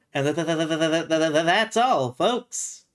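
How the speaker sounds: stutter on "tha-" before the closing words. Doing the cartoon sign-off after a player names it: Porky Pig voice. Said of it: "or am I thinking of Porky Pig?".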